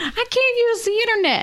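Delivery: put-on high old-person whine.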